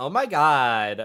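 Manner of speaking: loud put-on Valley Girl voice, "god" drawn out. Put on the spot for an impression, doing a put-on valley girl voice. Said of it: "I'll do a Valley Girl".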